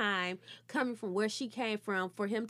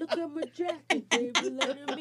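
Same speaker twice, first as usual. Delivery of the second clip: put-on childlike boasting voice, pitched higher; 5 semitones higher, 4 dB louder than usual. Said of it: "He be like".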